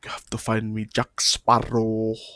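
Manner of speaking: put-on deep voice with a Spanish accent. Recalling a favorite movie villain's line: Javier Bardem impression. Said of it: "Where he's like".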